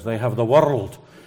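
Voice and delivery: Scottish accent, extra R's in "world". Comparing his Liverpudlian accent with the Scottish one, in a Scottish accent, extra R's. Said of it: "the people in Scotland put at least 3 extra ones".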